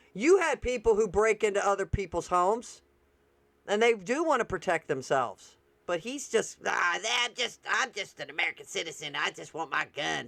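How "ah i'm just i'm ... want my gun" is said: derisive, sneering put-on caricature voice. Retelling how another speaker mocked American gun owners: mocking imitation of a gun owner. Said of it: "So he is mocking Americans".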